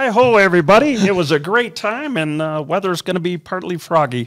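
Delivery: cartoon frog puppet voice. Asked by the co-host to close the episode, the speaker does a Kermit voice. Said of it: "best Kermit voice".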